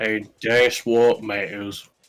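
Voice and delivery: slipping into orc character voice. Commenting on a treasure find during play, slipping into orc character accent. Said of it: "The accent changed there".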